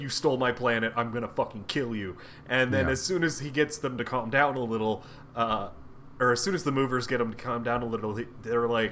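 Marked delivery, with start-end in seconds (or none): 0.0-2.2 mock-unhinged outburst, much lower pitched. Retelling the High Evolutionary's outburst at the movers, acting out going full nut bar. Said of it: "he goes full nut bar".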